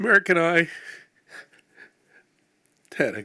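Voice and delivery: crying while speaking. Speaking at a memorial after being introduced, crying while speaking. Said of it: "I'm already crying".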